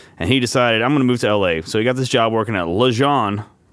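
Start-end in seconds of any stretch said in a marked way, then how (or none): 2.7-3.5 le jean pronounced with French accent. Telling of a job he got in L.A., French accent on Le Jean. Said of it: "I said that like a French guy".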